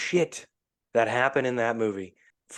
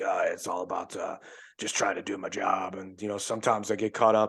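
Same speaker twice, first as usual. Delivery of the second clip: deep gargly put-on voice, lower and quieter; 4 semitones lower, 5 dB quieter than usual. Retelling a movie scene of an apology: Nick Nolte deep gargly voice. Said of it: "Nick Nolte's got that deep, gargly voice".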